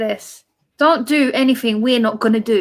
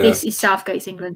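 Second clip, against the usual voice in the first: ordinary talk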